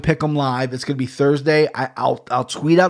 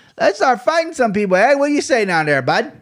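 high, faked Canadian accent, played for laughs; 9 semitones higher than usual. Joking about starting fights, try out a Canadian accent. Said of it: "That's my Canadian accent".

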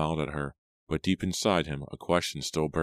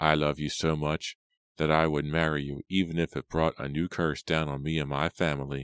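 ordinary delivery

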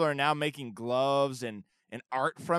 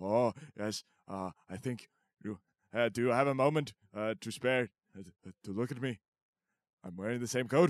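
lower-pitched put-on old politician voice; 4 semitones lower, 3 dB quieter than usual. Joking that the impression of Bernie Sanders is really Robin Williams: Bernie Sanders impression. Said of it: "my Bernie Sanders impersonation is, uh, just my Robin Williams impersonation".

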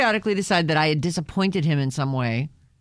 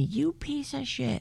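mock very high, rasping, rough shout; 10 semitones higher, 8 dB quieter than usual. Retelling what someone yelled at them: imitating someone yelling. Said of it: "He yelled at me".

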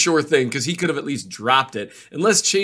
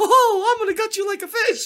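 imitated very high cartoon mouse voice. Retelling a son's violent jokes, imitating a Mickey Mouse voice. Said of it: "gotten really good at imitating Mickey Mouse".

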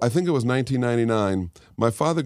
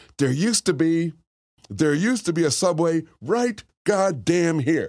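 put-on yelling, ranting voice; 6 semitones higher than usual. Retelling how a father stood on a corner: imitating father yelling. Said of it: "standing on a corner yelling at the sidewalk".

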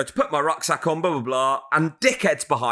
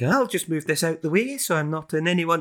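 poor put-on Aberdeen accent. Retelling what a man from Aberdeen said: bad Aberdeen accent impression. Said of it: "That's a bad Aberdeen impression".

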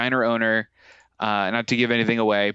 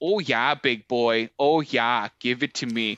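put-on Minnesota accent, slower. Recounting the funniest part of an episode, the speaker quotes it in a Minnesota accent. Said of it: "the Minnesota".

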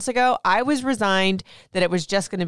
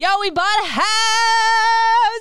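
excited, thrilled, very high, with "house" drawn out; 13 semitones higher, 4 dB louder than usual. Greeting listeners and sharing household news, excited. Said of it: "as excited as I sound about that".

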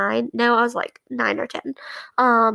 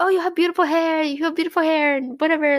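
play-acted, light, mild, pitched-up hawker call-out voice; 5 semitones higher than usual. Retelling how a mall vendor called out to her mom: imitating a vendor shouting. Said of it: "he was, like, shouting at her".

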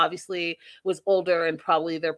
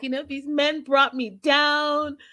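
mock weepy, sobbing, crying voice; 9 semitones higher than usual. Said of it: "She's crying. She's like".

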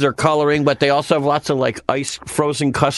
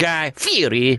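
put-on showy, flourished Italian-accented pronunciation of the name. Imitating Guy Fieri saying his own name: Guy Fieri with Italian accent. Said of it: "saying it with this flurry of Italian accent".

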